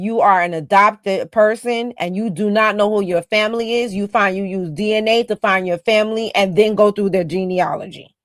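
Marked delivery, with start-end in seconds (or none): none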